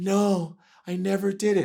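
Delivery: gentle, soft, creepy drawl, very slow and drawn out. Arguing Michael isn't believed because of his voice, doing a soft creepy Michael voice. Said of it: "He sounds creepy".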